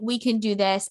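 ordinary talk, nothing marked

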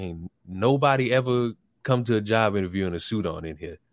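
ordinary talk

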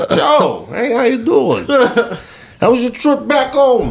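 put-on sing-song Italian accent, very high and swooping. Retelling a greeting to a friend, imitating someone in an Italian accent. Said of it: "You over here talking in a fucking Italian accent".

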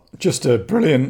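voice breaking mid-phrase, jumping high and loud. Praising someone who is leaving the club, voice breaking mid-sentence. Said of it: "my voice is breaking there".

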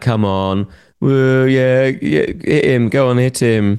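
high, slow, sarcastic jeering, fake cheering. Retelling what children shout during outdoor boxing: imitating sarcastic shouted jeers. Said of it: "sarcastic things like".

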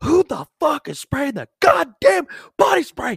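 very high, swooping, furious, raging scream. Recounting storming up to a group, retelling his own screaming. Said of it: "and I'm screaming".

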